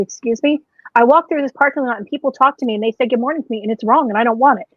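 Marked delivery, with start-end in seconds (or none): none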